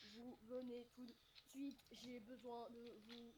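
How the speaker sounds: low, hushed, level robotic monotone. The speaker addresses a group, doing a Terminator voice. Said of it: "Tu peux faire la voix du Terminator?".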